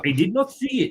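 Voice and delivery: clumsy fake French accent. Recalling Arsène Wenger, quoting him in a not very good French accent. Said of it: "that's not a very good French accent".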